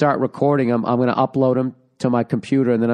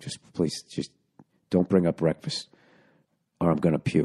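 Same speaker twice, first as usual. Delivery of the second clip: put-on deadly serious voice; 7 semitones lower, 7 dB quieter than usual. Recalling being badly hungover when a woman mentioned breakfast; retelling in a dead-serious tone. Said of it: "the dead serious tone".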